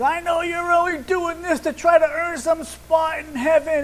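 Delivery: put-on angry yelling. Retelling a woman who walked up and started yelling at the speaker; retelling a yell. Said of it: "She starts yelling at me".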